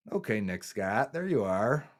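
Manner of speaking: ironic, sarcastic delivery. Breaking down game film as a player stuffs a run: sarcastic. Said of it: "I'm kinda sarcastic there".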